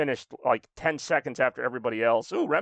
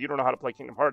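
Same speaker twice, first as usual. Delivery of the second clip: normal talking voice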